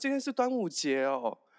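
sudden, high, startled, surprised shout. Opening the door, speaker re-enacts suddenly remembering the holiday: retelling a surprised shout. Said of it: "我就大叫说啊".

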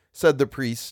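plain reading voice

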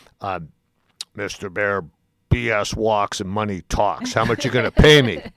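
rough, gruff manner. Retelling how Finley answered a request to broadcast his games: gruff Finley impression. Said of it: "in his typical gruff manner".

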